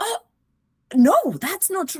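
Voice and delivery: very high, very loud, forceful delivery. Retelling a student's reply in class, imitating a forceful protest. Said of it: "very forcefully".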